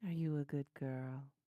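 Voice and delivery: voice suddenly dropping low. Talking to Pika, voice suddenly dropping low. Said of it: "I did not mean to have my voice drop like that".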